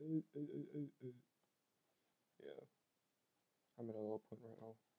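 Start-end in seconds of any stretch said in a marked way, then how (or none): 0.0-1.1 drawn-out, ironic, playful fun voice. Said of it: "this is my fun voice".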